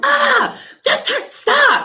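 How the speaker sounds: sudden, sharp, shrill snapping yell, pitched way up. Retelling how she snapped at the speaker out of nowhere, imitating P yelling. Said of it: "She just like yelled at me".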